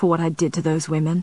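ordinary delivery

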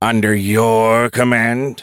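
loud, spat-out words, your stretched. Admiral Formanova, a political appointee, replies to the previous speaker, spat. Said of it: "Spat Admiral Formanova".

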